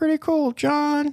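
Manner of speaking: very high, squeaky, goofy, weird silly voice. A podcast host answers their own question in a weird silly voice. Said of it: "I just did weird voices".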